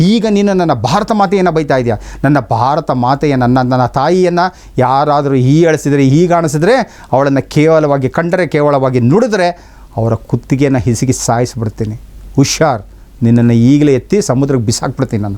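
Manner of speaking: normal talking voice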